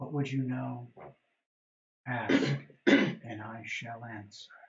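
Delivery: soft, gentle, softly spoken angelic voice. Game master voicing a kneeling angel speaking to the players, in a soft voice. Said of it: "You hear a soft voice say".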